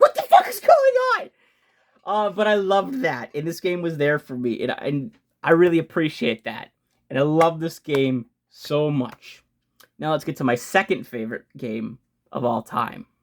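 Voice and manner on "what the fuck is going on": high, loud, shocked shriek. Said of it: "go like".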